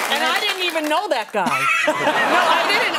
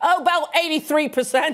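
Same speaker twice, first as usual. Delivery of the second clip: put-on Australian accent. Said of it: "I apologize for the accent".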